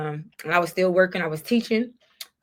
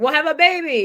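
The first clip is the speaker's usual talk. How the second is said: put-on very thick Spanish accent, raised voice; 9 semitones higher, 6 dB louder than usual. Quoting a Spanish-speaking man, in a very thick Spanish accent. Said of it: "His very thick accent was like".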